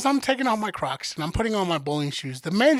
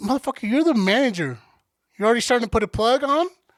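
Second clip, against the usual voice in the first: ordinary talk, nothing marked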